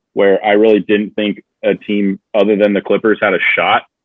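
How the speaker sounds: ordinary delivery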